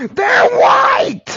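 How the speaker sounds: high, loud, furious yell.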